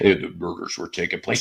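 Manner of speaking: low, rough movie-trailer narrator voice. Retelling a joke made while driving past an old house: Thanksgiving trailer guy voice. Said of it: "the Thanksgiving guy voice".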